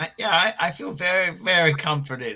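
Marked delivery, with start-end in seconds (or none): 0.9-2.4 openly sarcastic delivery, meaning the opposite. Answering someone's remark that you're not comforted, sarcastic. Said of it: "This is my sarcasm".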